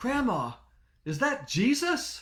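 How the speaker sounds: put-on shrill, very high, loud little-kid shout. Retelling calling out to grandma at a baptism as a small child, in a loud kid voice. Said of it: "in a loud kid voice, I yelled out".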